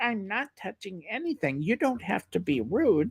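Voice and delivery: put-on very soft, hushed, high little old lady voice. Retelling a scene where an old lady answers a guy, imitating a little old lady. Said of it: "the little old lady".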